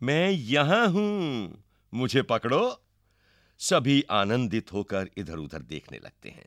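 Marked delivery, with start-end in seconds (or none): 0.0-2.8 high, playful, impish, mischievous teasing taunt. A girl peeks out from behind the dancer and calls to everyone, mischievous. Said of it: "लड़की शरारत से".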